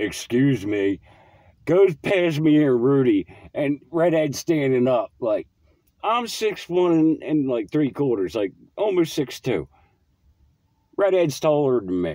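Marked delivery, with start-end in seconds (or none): 0.0-1.0 imitated offended, pissed-off tone. Retelling how an offended person excused himself: imitating an offended, pissed-off tone. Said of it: "all offended and all pissed off".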